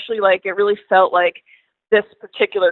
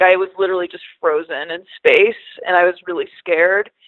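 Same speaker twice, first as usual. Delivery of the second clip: ordinary talk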